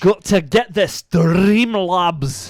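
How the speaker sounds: terrible fake Scottish accent, loud and high. Host on stream acknowledging another Streamlab, in a terrible Scottish accent. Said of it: "He said in his terrid Scottish accent".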